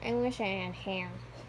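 low, put-on cartoon squid voice. Looking at a bald figure, the speaker does a Squidward voice. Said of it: "That's my best impression of Squidward".

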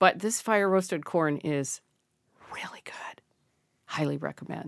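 whispering with excitement. Recommending fire-roasted frozen corn to the other speaker, in an excited whisper. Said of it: "Why are you whispering?".

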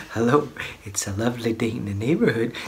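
low, creepy, sinister tone that still sounds friendly. Doing the greeting after the other speaker asks: sinister Mister Rogers impression. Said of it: "it sounds sinister, like, somebody going".

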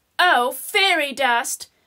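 plain reading voice

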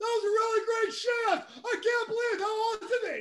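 overbearing, far too loud chatter, pitched way up. Retelling what a driver says after getting out of the car: imitating someone talking too loud. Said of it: "you're still talking too loud".

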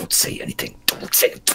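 menacing whisper, close and very hushed. Leaning in to the animated rifle, telling it to stay silent: whispering a threat. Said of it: "I kind of lean in and whisper".

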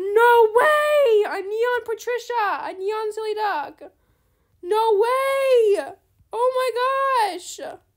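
very loud, very drawn out, wild ecstatic joy. Streamer thanks someone for a gift, overjoyed, going crazy. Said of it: "I'm going crazy".

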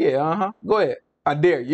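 mock-sarcastic, smirking. Acting out how a man probably taunted another man, mock-sarcastic, smirking. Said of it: "He probably said it like with a little smirk on his face".

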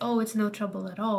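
usual speaking voice

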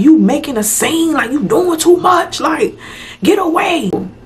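mock, high-pitched hollering yell. Retelling the man yelling out the window: imitating someone yelling. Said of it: "He yelling".

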